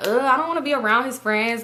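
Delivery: ordinary delivery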